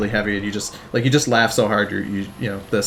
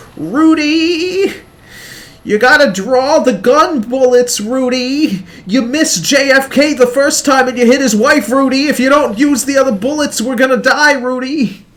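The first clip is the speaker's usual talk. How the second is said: shrill, loud, squealed goofy cartoon yell, name drawn out; 8 dB louder than usual. Explaining how Snap always says Rudy's name, doing Snap's stupid voice. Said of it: "where you just do Snap's stupid voice".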